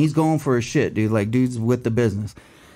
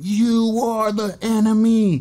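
very high, drawn-out, top-of-the-lungs shriek; 10 semitones higher than usual. Recounting a man screaming before police tackle him, retelling a top-of-lungs scream. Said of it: "screaming at the top of his lungs".

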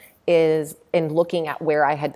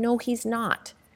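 muttered under the breath, much higher and slower; 7 semitones higher, 4 dB quieter than usual. Retelling her mom's reaction to his yoga claim, imitating mom under her breath. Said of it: "like under her breath".

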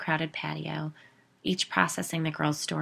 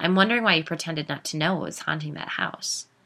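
plain

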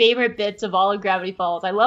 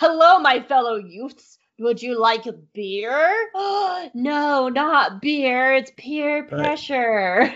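mocking fake teen voice, higher pitch; 4 semitones higher than usual. Joining in mocking adults in school safety videos: imitating adults playing teenagers. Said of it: "adults just being like".

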